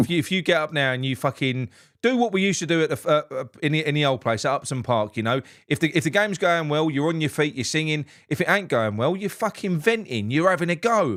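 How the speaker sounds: ordinary talk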